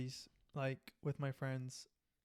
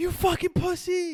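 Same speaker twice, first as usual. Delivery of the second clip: very high, very loud, shrill rage scream; 15 dB louder than usual. Retelling a roommate screaming at video games at night: imitating a rage scream. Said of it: "Like rage scream".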